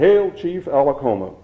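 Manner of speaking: ordinary delivery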